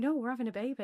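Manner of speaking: acted cocky, overconfident, matter-of-fact tone. Retelling own reply to a question: imitating own cocky tone. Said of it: "Because you were so cocky".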